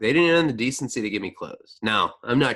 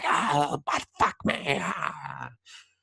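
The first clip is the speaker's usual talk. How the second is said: rough, possessed demonic rasp, very slow; 7 semitones higher, 3 dB quieter than usual. Retelling an outburst at a jail officer: imitating own possessed demonic voice. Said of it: "possessive satanic Latin came out of me".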